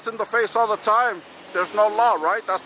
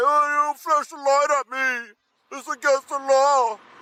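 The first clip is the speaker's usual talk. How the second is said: put-on whimpering, fake whiny crying; 5 semitones higher than usual. Mocking an officer who complained about a flashlight: mocking imitation of crying. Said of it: "You sound like a bitch crying over there about a flashlight".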